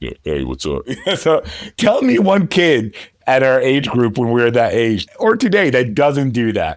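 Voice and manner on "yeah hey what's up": faked, deepened, low put-on voice. Retelling how a boy answered a phone call from a girl, put-on deep voice. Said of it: "he just changed his voice deeply".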